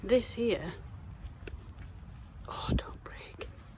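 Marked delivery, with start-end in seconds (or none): 2.5-3.5 soft, breathy, gentle whisper. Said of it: "I don't know why I'm whispering".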